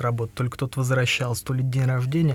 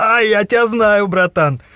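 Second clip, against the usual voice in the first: very loud, high, drawn-out, acted merry drunk voice; 9 semitones higher, 10 dB louder than usual. Retelling how a drunk guy ran up to him, imitating a cheerful drunk. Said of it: "такой прям пьянющий такой".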